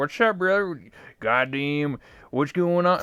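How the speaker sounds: put-on backwoods hillbilly voice. Recalling how he talked in VR chat as his character, hillbilly voice. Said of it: "Like I just talk like a hillbilly".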